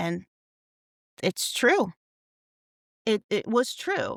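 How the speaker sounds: close to tears, choked up, wavering pitch. On a comedy podcast, recalling a line that hit hard: choking up, near tears. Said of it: "I'm about to cry again".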